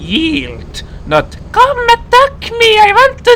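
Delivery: high, loud, mocking monster whine.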